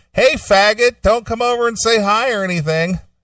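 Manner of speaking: very high, jabbing, shouted yell. Retelling seeing someone in the hotel lobby, the speaker repeats his yell: retelling a yell. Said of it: "so I just kind of yelled at him".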